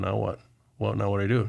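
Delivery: put-on crying, tearful voice. Retelling a World Series champion's words as teammates celebrate: imitating someone crying. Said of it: "he just started crying".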